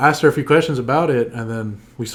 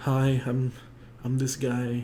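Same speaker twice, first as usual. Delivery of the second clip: mock timid voice, quieter; 9 dB quieter than usual. Retelling own high school self approaching someone: imitating own timid self. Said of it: "High school was, like, really timid".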